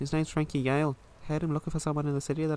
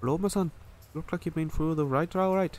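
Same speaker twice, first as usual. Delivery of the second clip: brief, rough, put-on Irish accent. Voicing a game character at a chapel, in a quick Irish accent. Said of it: "I can only do a really quick Irish accent".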